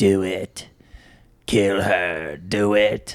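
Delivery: sinister evil demon voice, very slow. Retelling a dream, doing the evil voice heard in it. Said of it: "like an evil voice".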